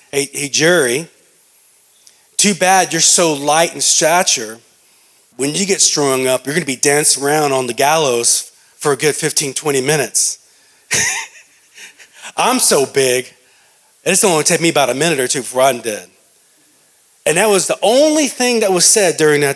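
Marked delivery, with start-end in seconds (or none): none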